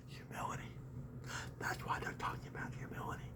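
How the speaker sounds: very quiet, hushed whisper. A speaker addressing an audience, suddenly whispering. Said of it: "I don't know why I'm whispering".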